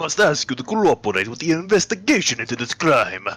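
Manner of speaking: fake Russian accent, man's voice. In a game role-play, speaking to Mister Stogie in a put-on Russian accent. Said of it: "Hello, it's me, a Russian man. / a Russian man. / Become Russian. / a Russian man".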